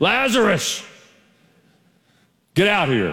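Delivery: put-on dramatic call, high, swooping and drawn-out. Acting out Jesus calling Lazarus out of the tomb: loud voice as Jesus. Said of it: "Jesus said it in a loud voice".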